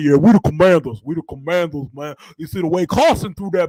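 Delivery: thick Louisiana drawl. Showing how Doug Williams talks about the Commanders, in a thick country Southern voice. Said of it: "Doug Williams be like".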